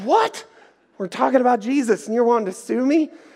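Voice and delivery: mock very high, stunned, incredulous disbelief. Retelling his reply when threatened with a lawsuit on the phone: retelling an incredulous reaction. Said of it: "incredulous reaction to lawsuit threat".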